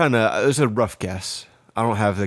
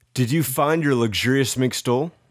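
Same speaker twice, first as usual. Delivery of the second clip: ordinary delivery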